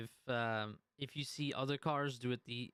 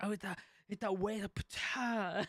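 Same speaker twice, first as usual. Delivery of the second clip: surfer voice, much higher pitch, slower; 7 semitones higher than usual. Complaining about car feedback, the speaker acts out a hypothetical reply in a surfer voice. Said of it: "You sound like that one surfer".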